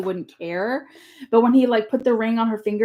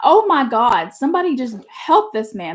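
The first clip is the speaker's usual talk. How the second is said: urgent, exclaimed, pleading cry; 2 semitones higher than usual. Retelling own reaction to an awkward scene: imitating own screaming. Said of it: "And I'm screaming like".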